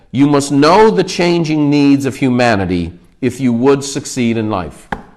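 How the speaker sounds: plain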